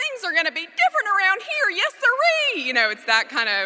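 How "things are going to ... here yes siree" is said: very high, furious, blustering cartoon cowboy voice. A parent retelling losing it with their tired 7-year-old, Yosemite Sam voice. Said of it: "you just lose it, and it's like a Yosemite Sam".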